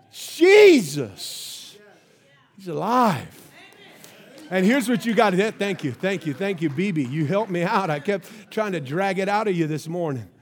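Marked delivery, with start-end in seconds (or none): 0.2-3.3 Pentecostal preaching style. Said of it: "a little bit more Pentecost in me".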